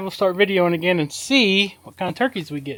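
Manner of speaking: usual speaking voice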